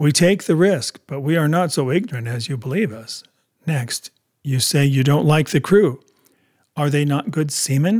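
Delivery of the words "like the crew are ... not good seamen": plain reading voice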